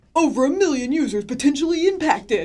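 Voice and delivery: very loud, high, dramatic news-headline announcing voice. Quoting news headlines he saw, in his headline voice. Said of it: "Is that your headline voice?".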